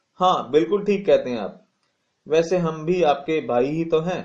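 usual speaking voice

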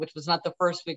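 ordinary talk

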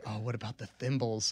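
put-on muttering under the breath. Retelling what a woman said, quoting her remark under her breath. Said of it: "Kind of like under her breath".

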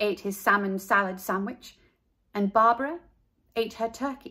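ordinary delivery, nothing marked

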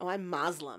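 goofy, funny put-on American accent. Retelling how he answered a question about his religion: funny American accent. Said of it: "in a really funny American accent".

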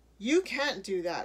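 very angry, loud crying out. A woman told she will be jailed cries out at the mayor, very mad. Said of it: "she cried".

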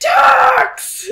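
loud screamed word. The answer was in all caps, so you had to scream it: screamed word docks. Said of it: "You had to scream it".

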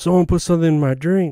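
put-on yelling, pitched high. Telling a story about a woman at the sink, imitating her yelling. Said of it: "And she's yelling".

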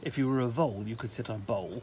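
ordinary delivery

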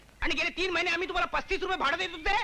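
loud ranting. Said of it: "हळू बोला, हो".

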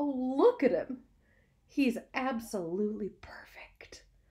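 hushed, high, slow, drawn-out whisper. Fern looks at the tiny pig her father saved, whispering. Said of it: "she whispered".

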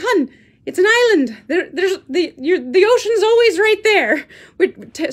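poor put-on Irish accent. Retelling a man's reply to the speaker's question, in a terrible irish accent. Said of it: "Sorry for my terrible Irish accent".

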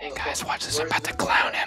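hushed whisper. Streamer cooking with someone whispers an aside to chat. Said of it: "Stop whispering to chat".

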